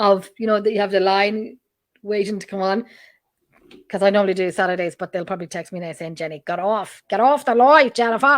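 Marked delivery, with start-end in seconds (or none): 6.1-8.4 really bad fake Australian accent, raised voice. Acting out a text she expects to get, in a bad australian accent. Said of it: "that was a really bad Australian accent".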